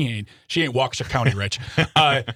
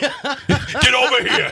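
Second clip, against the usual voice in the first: mock faded New York accent, higher and louder; 12 semitones higher, 4 dB louder than usual. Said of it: "What is this accent?".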